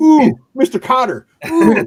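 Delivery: put-on very high, very loud, shrill, drawn-out eager kid. Teasing another speaker for finishing early: imitating an eager front-row kid. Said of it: "You're like the front row kid".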